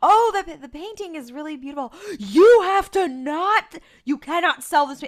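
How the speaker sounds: mock manic, shrill, very high, very loud frantic gush. Retelling a scene where a character suddenly goes crazy over a painting: imitating Sam going crazy. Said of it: "he immediately becomes fucking crazy".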